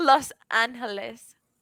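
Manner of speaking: Mexican Spanish-accented pronunciation. Asked about saying a city name with a Mexican accent, in a Mexican Spanish accent. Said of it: "Mexican accent?".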